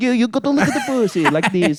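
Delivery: mock Italian man's accent. Acting out an imagined guy giving sex tips: put-on Italian accent. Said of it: "I don't know what fucking accent that was".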